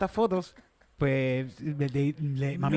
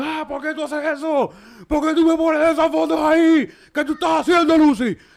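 shrill, very high, loud yelling; 12 semitones higher, 8 dB louder than usual. Retelling how Dad arrived and yelled at Lucy, retelling a shout.

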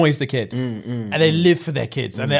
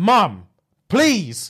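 put-on all-out desperate voice, high and swooping; 5 semitones higher than usual. Recalling a broken foot and asking mum to come pick them up, retelling begging mum. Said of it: "I begged my mum".

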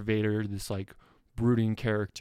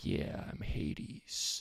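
slow, breathy, menacing whisper; 5 semitones lower, 9 dB quieter than usual. Retelling how the first casting of a character would sound: imitating a slow, threatening Hades voice. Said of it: "slow talking, like, threatening character".

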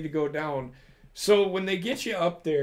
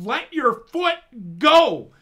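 high, loud, shouted yelling; 7 semitones higher, 9 dB louder than usual. Recounting a man yelling at them as they look up, retelling a yell. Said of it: "he's yelling at me".

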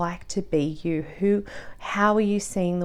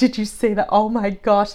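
put-on sobbing voice; 3 semitones higher, 5 dB louder than usual. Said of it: "I'm like sobbing and like hitting them like".

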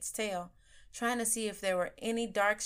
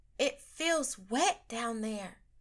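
miserable, unhappy whisper; 3 semitones higher than usual. Zoe answers Jose's question, whispering miserably. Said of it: "she whispered miserably".

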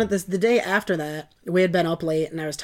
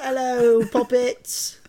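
put-on British accent, pitched up; 6 semitones higher than usual. Greeting the audience as a joke: put-on British accent. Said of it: "We're British".

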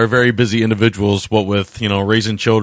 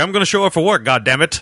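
bad put-on British actor voice, higher pitch; 8 semitones higher than usual. Joking about an actor cashing a paycheck, bad Malcolm McDowell impression. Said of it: "my really bad Malcolm McDowell impression".

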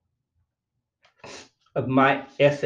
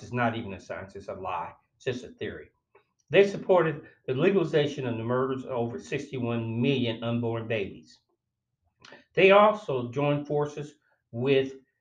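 plain

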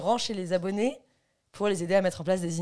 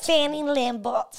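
pitched-up southern French accent; 7 semitones higher, 4 dB louder than usual. Repeating a name after being asked to try an accent: southern French accent. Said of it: "j'ai vraiment fait avec un accent du Sud".

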